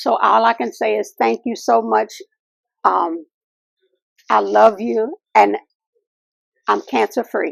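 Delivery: choked-up voice, holding back tears. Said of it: "I wanna do this without crying".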